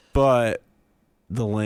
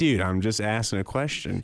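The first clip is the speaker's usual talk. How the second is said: ordinary delivery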